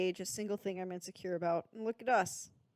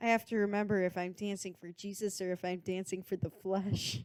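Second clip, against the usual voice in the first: normal talking voice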